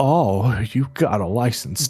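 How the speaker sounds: slow, creaky put-on old-lady voice. Retelling what an old lady said to Axel, in an accent quoting her. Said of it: "I was just doing my accent".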